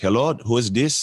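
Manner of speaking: strong put-on Nigerian accent, laid on thick. Speaker retells calling a man who answers the phone, heavy nigerian accent. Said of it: "Like heavy Nigerian accent".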